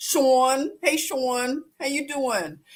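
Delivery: friendly Philadelphia accent on hello. Greeting someone who just joined, in a philadelphia accent. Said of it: "I have to say it like a, a Philadelphian".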